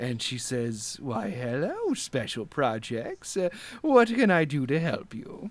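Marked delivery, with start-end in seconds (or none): 1.0-5.5 put-on smiling grandmotherly voice, quieter. Narrator voices an elderly woman who looks up and greets the players: smiling old grandmother voice. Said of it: "she looks up and she smiles at you".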